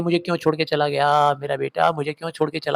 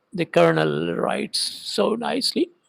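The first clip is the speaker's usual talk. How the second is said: slow, tearful near-whisper, voice giving out; 5 dB quieter than usual. Acting out how a woman crying too hard to speak might have said it: imitating a choked, tearful voice. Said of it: "कुछ इस तरह से बोली होगी".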